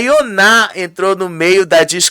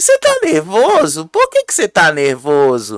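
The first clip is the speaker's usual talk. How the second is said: sweetly calm, sing-song mocking with a little laugh. Retelling how one side of a quarrel answered the shouting: imitating Saori's calm mocking tone. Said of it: "bem calminha, com este risinho aí, debochando".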